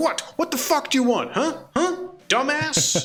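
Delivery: very high, hostile, aggressive, confrontational taunting tone. Voicing a neighbor squaring up to someone: aggressive confrontational challenge. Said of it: "does his arms wide to, to do, like, the posture of".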